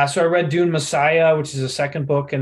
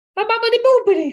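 fake Italian accent, higher; 3 dB louder than usual. Answering a request to speak in an Italian voice: put-on Italian voice. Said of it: "speak in an Italian voice".

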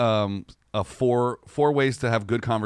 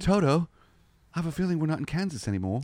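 high-pitched put-on British accent; 5 semitones higher, 3 dB quieter than usual. Quoting famous film lines, one speaker does Judy Garland in British accent. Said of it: "She's British now".

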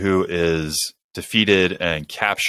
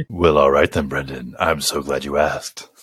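put-on, well-spoken deep baritone, much lower; 4 semitones lower than usual. Answering a request for a recap, in a deep baritone voice. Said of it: "deep baritone recap of Loki?".

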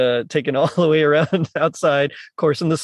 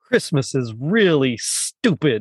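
put-on angry delivery. Retelling what Kirk says while alone on the couch, imitating Kirk being mad. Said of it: "he's just mad".

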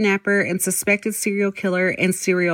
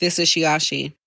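flat, monotone robotic voice, lower pitch; 4 semitones lower than usual. Repeating own podcast intro to show how it sounds: robotic, flat delivery. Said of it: "Mine sounds very robotic".

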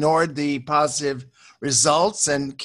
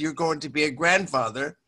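ordinary talk

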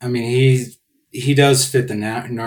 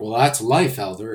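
ordinary talk, nothing marked

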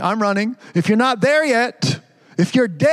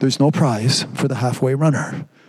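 plain, normal everyday speaking voice; 8 semitones lower than usual. Quoting a brother reminding the youngest of something: very quiet voice. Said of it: "in a very, very quiet voice".

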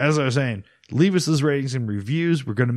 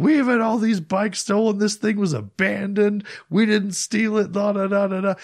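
mock furious, high, angry yelling rant; 8 semitones higher than usual. Telling how their mom yelled at a police officer at the station, retelling an angry yell. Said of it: "She's like yelling at the police officer".

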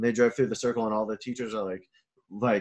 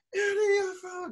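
mock child scream, higher pitch. Retelling a kindergartner waving a shaker from a car window: imitating a kid screaming. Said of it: "screaming this".

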